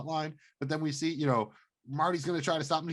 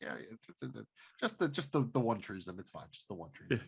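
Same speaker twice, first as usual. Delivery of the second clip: low, dismissive, completely straight deadpan delivery; 5 semitones lower, 7 dB quieter than usual. Comparing to a similar show scene about treason: imitating Michael Bluth's deadpan. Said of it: "so good at that deadpan delivery".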